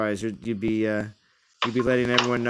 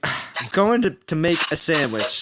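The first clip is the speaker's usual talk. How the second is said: slow, halting, stumbling, completely fed up, pitched up; 6 semitones higher, 4 dB louder than usual. Retelling own words from an earlier stream: imitating own broken-up frustrated speech. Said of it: "I said it all broken up too".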